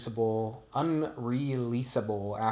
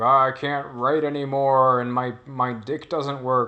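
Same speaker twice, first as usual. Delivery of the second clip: goofy put-on Cajun accent; 8 dB louder than usual. Describing the movie Zandalee, imitating Judge Reinhold's character, goofy Judge Reinhold Cajun accent. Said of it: "Talks in this this weird accent".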